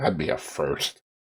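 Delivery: soft, under-the-breath muttered aside. In a role-play, answering a character's warning, muttered under breath. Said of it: "Under my breath".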